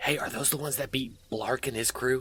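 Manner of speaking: hushed voice. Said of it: "it kind of whispering".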